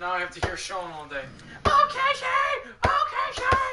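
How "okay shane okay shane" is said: very high, slow squeaky mouse voice. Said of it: "Squeaky mouse voice".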